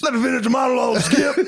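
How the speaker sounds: put-on sports announcer voice, pitched way up, very high. Joking about a freak accident, doing a Shannon Sharpe impression. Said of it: "I'm trying to do the impression".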